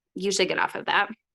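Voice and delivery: ordinary talk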